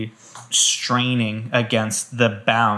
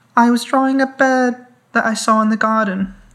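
put-on scary little girl voice, high, loud and eerie. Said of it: "She's scary".

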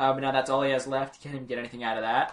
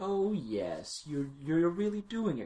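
forced calm, higher pitch, quieter and slower; 3 semitones higher, 6 dB quieter than usual. Discussing a scene, quoting the Beast trying to act calm, Beast acting fake calm. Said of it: "trying to act all calm".

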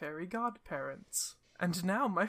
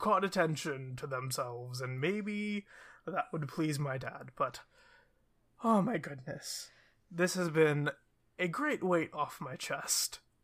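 earnest, relieved, unburdened, chatty and rambling; 3 semitones lower than usual. In a tabletop game, the firbolg prince talks with a player: firbolg prince character voice. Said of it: "a firbolg wearing this blue suit with a large cravat, a sort of rapier-like sword on his side. He has this gray-colored fur that's very thick, cow-like ears and a cow-like nose, very cute. And he seem".

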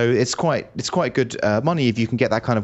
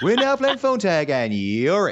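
imitated commercial announcer voice; 8 semitones higher than usual. Retelling a voice message from the course organizer: imitating a TV commercial voice. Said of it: "the voice message is just like a T V commercial".

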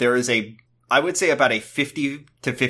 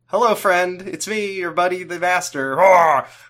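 put-on, high, loud yelling at full blast; 7 semitones higher, 4 dB louder than usual. Retelling the Master's broadcast to everyone: imitating the Master yelling. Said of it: "He's just yelling really loud".

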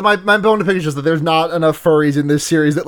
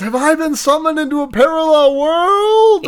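very high, baffled, bewildered shout; 10 semitones higher than usual. Retelling an anime's opening scene: imitating Subaru shouting. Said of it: "And then he shouts".

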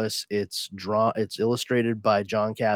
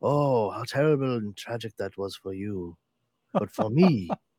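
theatrical, put-on villain accent. Acting out a villain's reply to a grieving hero: Raul Julia type accent. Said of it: "he starts speaking in a Raul Julia type accent".

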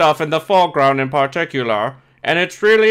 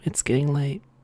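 mock soft, whispery ASMR-style voice, quieter; 2 semitones lower, 8 dB quieter than usual. Joking to viewers late at night: put-on soft ASMR voice. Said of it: "we're gonna talk real softly right now".

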